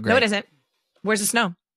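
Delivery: ordinary talk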